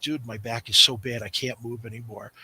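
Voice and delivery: put-on whisper. Retelling what a wrestling partner said in the ring: imitating someone whispering. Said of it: "he's whispering to me".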